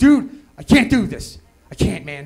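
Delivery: put-on, slow, panicky, pleading delivery. Retelling faking panic to a drug-test supervisor: imitating a panicky plea. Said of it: "I look at the guy all just panicky".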